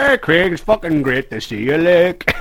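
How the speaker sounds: put-on high, loud, belted-out broad Irish accent.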